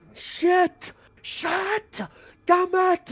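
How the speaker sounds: very high, very slow, drawn-out screaming. Voicing a captured enemy realizing he is powerless: screaming in character. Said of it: "he's just screaming as he realizes".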